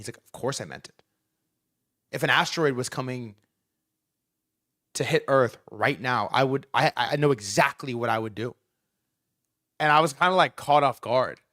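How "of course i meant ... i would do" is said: mock dead-serious, straight, low, deadpan delivery. Retelling a man's answer to a joking question about the earthquake: imitating a deadpan reply.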